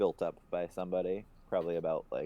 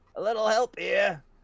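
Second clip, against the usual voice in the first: shrill, very loud, very high shout; 9 dB louder than usual. Voicing an aging woman calling down from the second story: aging woman yelling for help. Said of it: "she just yells down to you guys".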